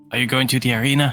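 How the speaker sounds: whispering. Asking another character a question while staying unnoticed: whispering in character. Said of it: "I'll whisper to".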